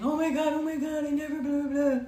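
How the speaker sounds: mock frantic, high, loud, tearful panicked crying. Retelling how a man freaked out back at the hotel, imitating someone crying in panic. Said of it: "He is freaking out, crying, saying".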